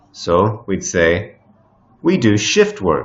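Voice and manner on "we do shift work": stress on the word shift in shift work. Lesson on stressing the first word of compound nouns: stress on the word shift. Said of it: "we emphasize or stress the first word in a compound noun".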